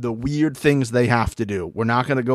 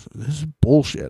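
salty, angry, irritated tone; 3 semitones higher than usual. Retelling a contestant's angry complaint: imitating someone being salty. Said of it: "Nerys got real salty at the end".

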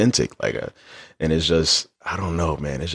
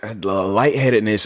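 normal talking voice

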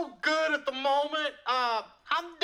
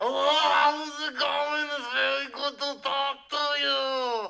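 put-on Austrian-accented action-star voice. Pretending Arnold took the phone on a call, in an Arnold Schwarzenegger voice. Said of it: "he's taking the phone".

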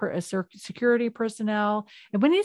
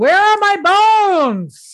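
very high, very loud, shrill drawn-out screaming; 11 semitones higher, 11 dB louder than usual. Retelling a story about missing bones, imitating someone screaming to the lab. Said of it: "She's just like screaming it to the lab".

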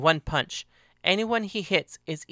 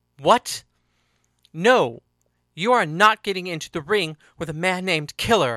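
firm, demanding, insistent tone; 2 semitones higher, 5 dB louder than usual. A character objects when another volunteers to enter the ring, demanding. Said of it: "Henry demanded".

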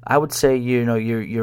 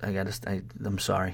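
ordinary talk, nothing marked

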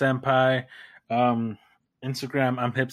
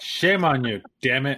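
ordinary delivery

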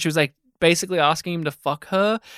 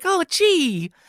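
put-on innocent young voice, higher; 11 semitones higher than usual. Describing an actor's earlier younger voice: young Tom Sizemore voice. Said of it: "a younger voice where he's, like, a little bit more like".

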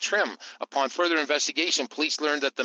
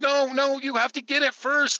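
shrill, pitched-up, frantic, totally panicked cry; 11 semitones higher, 3 dB louder than usual. Retelling a nine one one call from a hurt caller: imitating a panicked caller. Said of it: "just complete panic".

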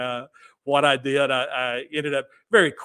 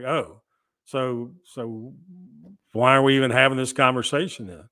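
voice sinking right down, low. Retelling the other person's reply after hearing the price: imitating his voice dropping. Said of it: "his voice just dropped".

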